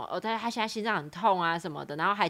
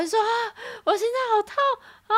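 put-on high, rushed, pained wailing cry. Retelling a patient resisting a hospital gown change, imitating wailing in pain. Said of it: "你这边一直就是在哀嚎".

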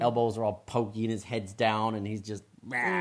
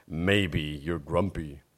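big, low storybook gorilla voice; 5 semitones lower than usual. Reading a story in parts, a performer voices Norman the gorilla. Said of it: "I'll do the big gorilla voice".

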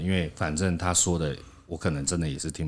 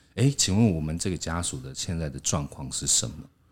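plain

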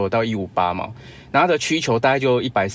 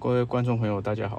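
sorrowful, low-energy, gloomy voice; 6 dB quieter than usual. A correspondent greets the audience from the scene: gloomy, listless voice. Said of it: "非常哀愁，非常有气无力的声音".

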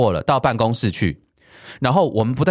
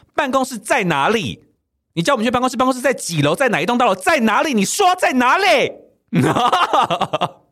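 acted-out furious shouting, pitched very high; 11 semitones higher than usual. Speaker re-enacting how they suddenly yelled from behind: re-enacting own yell. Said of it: "我就突然在背后我就用吼的".

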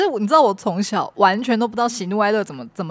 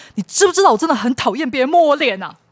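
mock harsh, fierce, angry scolding snap; 4 semitones higher, 4 dB louder than usual. Retelling being snapped at after trying to wipe a face: imitating a fierce snap. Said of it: "很凶的对我说".

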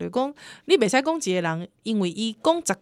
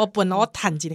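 put-on impression voice, much lower pitch; 3 semitones lower than usual. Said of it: "到学一下汪笨湖".

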